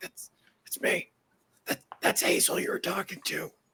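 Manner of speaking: soft whisper delivered right into the ear. Acting out a character grabbing someone's shirt: whispering in his ear. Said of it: "kinda whisper in his ear".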